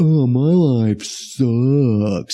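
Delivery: very slow, gloomy, mopey drawl with "sucks" stretched long. Complaining about a cartoon donkey's attitude, imitating Eeyore being negative. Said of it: "he's just so negative".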